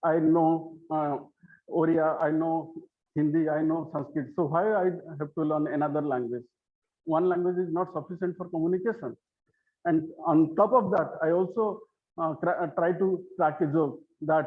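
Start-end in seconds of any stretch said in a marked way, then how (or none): none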